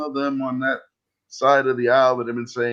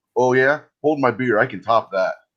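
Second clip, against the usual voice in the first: plain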